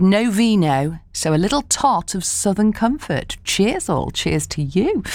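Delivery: ordinary delivery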